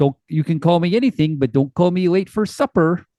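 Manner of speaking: put-on laid-on, obnoxious Minnesota accent. Describing a movie stepfather, quoting his line in De Niro's obnoxious Minnesota accent. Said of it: "obnoxious Minnesota accent".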